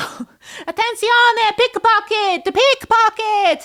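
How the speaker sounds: put-on very high, very loud, terrible Italian accent. Describing a video, the speaker imitates an Italian lady pointing out pickpockets: terrible Italian lady impersonation. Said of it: "terrible impersonation of an Italian lady".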